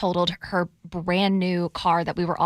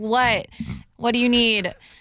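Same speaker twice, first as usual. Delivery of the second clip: mock-rude teen voice, higher; 4 semitones higher, 3 dB louder than usual. Retelling answering her mom calling from downstairs, imitating her rude teenage self. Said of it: "rudest teenage voice ever".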